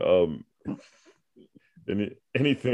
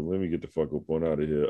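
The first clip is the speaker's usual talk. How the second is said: usual speaking voice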